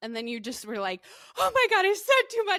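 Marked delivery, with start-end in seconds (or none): 1.4-2.6 freaked-out squeal, very high, shrill, loud, panicked. Retelling how the listener reacted after saying too much: imitating someone freaking out. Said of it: "started freaking out".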